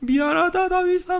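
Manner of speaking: put-on, tearful, loud wail, pitched very high. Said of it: "막 울면서 대성통곡하면서".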